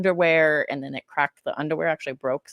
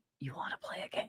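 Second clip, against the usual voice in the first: eerie puppet voice, breathed out as a whisper; 2 semitones lower, 17 dB quieter than usual. After a sound effect plays by mistake, the speaker quotes it: Jigsaw impression. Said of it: "that was Jigsaw".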